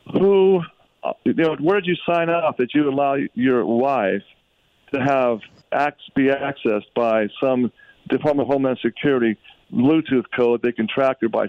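ordinary delivery

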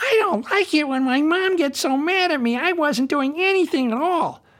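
squeaky, silly puppet voice, very high-pitched. Pretending his hand is a talking animal speaking to a child, in a silly hand-puppet voice. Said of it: "I make a silly voice and say".

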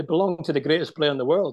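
normal talking voice

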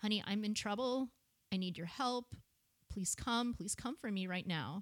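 mock urgent, frightened, panicky begging. Recounting phoning for help while being screamed at: retelling a panicky plea. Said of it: "my voice got more panicky".

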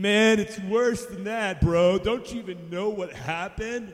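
put-on sad, gloomy tone. Acting out a sad traveller answering a stranger: acted sad, gloomy. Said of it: "why are you guys so, like, sad?".

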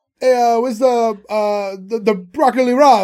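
put-on heavy Italian accent. Mocking people who suddenly put on an accent when ordering; thick fake Italian accent. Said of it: "this fake Italian accent that would be like embarrassingly thick".

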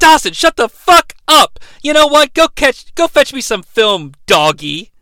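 high, loud snapping voice. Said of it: "[name] snaps at Dawson".

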